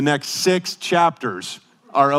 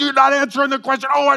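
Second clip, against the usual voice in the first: very high-pitched screaming outburst; 11 semitones higher than usual. Retelling screaming at news talk shows on the tv: imitating own screaming. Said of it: "I'm sitting there and I'm screaming at the T V".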